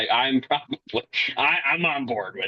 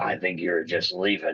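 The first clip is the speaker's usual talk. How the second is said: put-on gritty voice, pitched lower; 7 semitones lower, 3 dB quieter than usual. Retelling a movie cameo's line: Henry Cavill's Wolverine voice. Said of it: "his voice, he literally just went".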